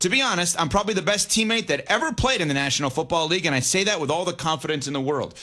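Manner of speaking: plain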